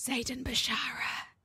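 hushed, breathy, very quiet murmured whisper. Saying a name in character before leaving the room: very quiet voice. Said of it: "I'm gonna very quietly go".

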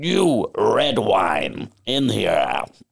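acted, very slow, tipsy old man drawl. Retelling what old men staggering up at eleven a.m. said: imitating a drunk old man. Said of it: "very old gin-blossomed men staggering up to me at eleven A M going".

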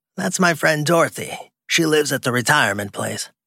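high, croaky, damaged-sounding croak. Waving to a driver, [name] speaks to him in a cigarette-damaged croak. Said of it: "He turned at the sound of a cigarette-damaged croak that barked off the walls. [name] Friedman, 70 years old, / He turned at the sound of a cigarette-damaged croak that barked off the walls. [name] Fr".

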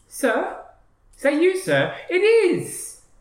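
put-on squeaky, very high, swooping street-urchin boy voice. Voicing the hired urchin boy calling out to a player: urchin boy voice. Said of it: "you hear a voice go".

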